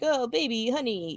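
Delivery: slimy Hollywood drawl. Retelling a cartoon character talking on the phone by a pool: imitating a Hollywood drawl. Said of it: "doing the whole Hollywood drawl thing".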